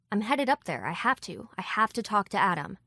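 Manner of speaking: usual speaking voice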